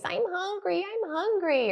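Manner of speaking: put-on very high, drawn-out whiny kid voice. Describing someone trying to get your attention, imitating a whiny voice. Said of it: "using that real whiny voice".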